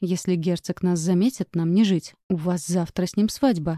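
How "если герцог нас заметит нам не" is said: ordinary delivery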